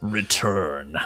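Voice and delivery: put-on deep voice. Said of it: "in that, like, deeper voice".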